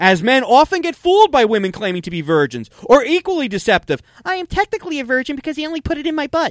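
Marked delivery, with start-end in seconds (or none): 4.2-6.5 put-on, pitched-up unicorn voice. Performing a comedy bit about a unicorn on the show, unicorn voice. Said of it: "Was that the unicorn voice you were doing?".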